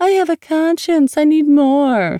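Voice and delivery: very high, taunting, mocking baby talk voice. On the phone, she mocks West by repeating his words, in a mocking baby voice. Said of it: "she mocked in a baby voice".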